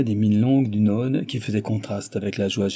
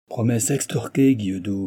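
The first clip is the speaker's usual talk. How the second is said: usual speaking voice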